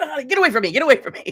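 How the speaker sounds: put-on very loud, very high, flustered delivery. Retelling his reaction to her store prank: imitating someone flustered. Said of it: "he gets all flustered".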